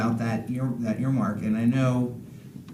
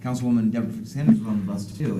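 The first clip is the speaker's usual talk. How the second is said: ordinary talk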